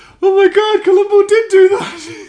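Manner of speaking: high, loud shocked, disbelieving shout. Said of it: "you're like".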